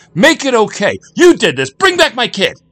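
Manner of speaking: very high, very loud, shrill, booming yell. A father after a fight with a bouncer, shouting. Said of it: "shouted Jack".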